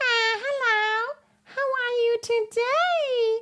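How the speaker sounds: very high pitch, today stretched out. Showing how a very high larynx sounds: Mickey Mouse voice. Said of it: "a little Mickey Mouse sound".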